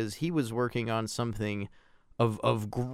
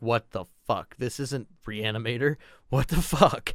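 put-on aghast, shocked disbelief. Retelling first seeing a movie, imitating own aghast reaction.

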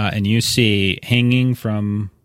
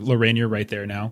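ordinary talk, nothing marked

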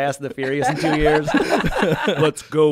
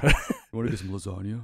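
lower bro voice, much quieter; 6 semitones lower, 6 dB quieter than usual. Showing how bros talk to each other, lower bro voice. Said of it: "Lower for food".

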